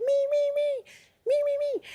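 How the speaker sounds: very high-pitched, little squeaky voice. Retelling his trick-or-treat costume line himself, in a high-pitched voice. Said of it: "in a high-pitched voice".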